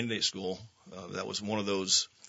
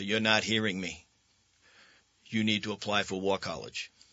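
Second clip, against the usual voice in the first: imitated, put-on Rhode Island accent. Speaker retelling how Mike urged applying to War College, imitating Mike's Rhode Island accent. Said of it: "he had this Rhode Island accent".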